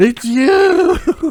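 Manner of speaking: high, loud startled shout, blurted out.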